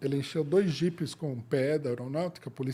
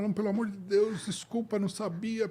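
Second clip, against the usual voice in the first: put-on desperate pleading tone, higher pitch; 7 semitones higher than usual. Retelling a man who nearly knelt, imitating someone begging. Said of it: "O cara só faltou se ajoelhar".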